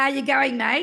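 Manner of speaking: loud, bright, twangy, ringing voice quality. Demonstrating twang as a voice quality on a greeting, bright ringing twang. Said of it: "Is twang".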